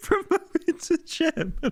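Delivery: laughing while talking. Reacting to a joke in a video, laughing hard while talking. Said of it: "Oh no, I'm crying now".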